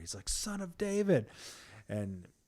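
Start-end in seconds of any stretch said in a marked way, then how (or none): 0.3-1.3 yelling even louder, pitched way up. Retelling a story, speaker acts out a man shouting over a crowd: retelling a louder shout. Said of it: "he's just like all the louder".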